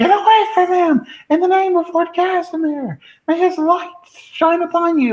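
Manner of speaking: put-on shrill screaming, pitched way up high. Playing a character fighting off a biting creature: screaming in character. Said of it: "I just start screaming".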